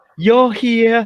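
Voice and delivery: put-on New York accent. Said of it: "we both got the New York accent".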